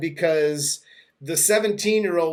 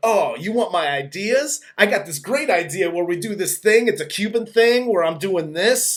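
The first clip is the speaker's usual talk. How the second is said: excited, eager, all worked up with enthusiasm; 3 semitones higher than usual. Retelling how Johnny pitches his dance idea: imitating excited Johnny. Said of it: "the Schweiz gets all excited".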